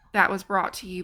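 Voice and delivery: plain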